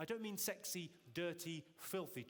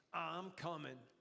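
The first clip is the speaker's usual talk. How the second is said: sexy seventies New York voice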